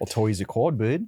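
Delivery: put-on Australian accent. Joking about Australians complaining over cardboard Happy Meal toys: Australian accent. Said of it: "That's pretty good. I can't do Australian".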